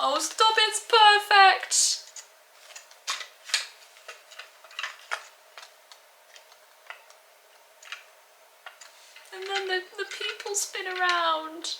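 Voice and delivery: very high-pitched, tearful crying speech. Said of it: "I'm crying".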